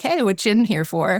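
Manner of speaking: acted joking, playful delivery. Retelling what the speaker jokingly said to the woman on the left, retelling a joking remark. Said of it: "I jokingly say to the woman".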